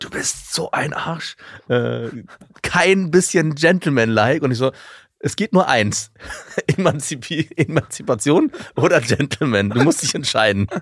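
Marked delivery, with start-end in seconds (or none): 0.0-4.4 play-acted livid, seething, furious tirade. Retelling how a woman stormed into the restaurant at him: retelling an enraged outburst. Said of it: "sie kam dann wirklich wutentbrannt".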